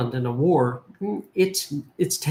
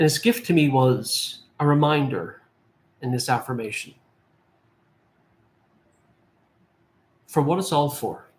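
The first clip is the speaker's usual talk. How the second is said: a little emotional, moved, slower delivery. Recalling what he was told in his affirmations, a little emotional. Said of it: "I get a little emotional with this".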